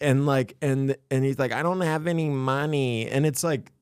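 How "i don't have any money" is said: put-on talking like a drunk kid. Retelling what a streamed drunk kid says: imitating Josh. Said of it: "that's exactly how he talks".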